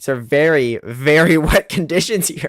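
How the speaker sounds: words breaking up with laughs. Commenting on cars spinning on a very wet track, laughing while talking. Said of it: "I'm sorry for, for laughing at this".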